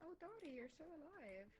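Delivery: happy, bright voice. Greeting someone found still alive, happily. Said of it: "I said it happily".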